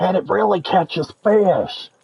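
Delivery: hoarse, raspy, slightly high put-on commercial voice. Remembering an old fishing rod commercial: Roland Martin hoarse voice. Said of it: "he's got that really hoarse voice. He's like".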